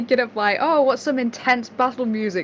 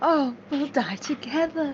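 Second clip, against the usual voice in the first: put-on lovingly romantic delivery; 6 dB quieter than usual. Repeating another player's line back at them: imitating a romantic tone. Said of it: "Why did you say that so romantically?".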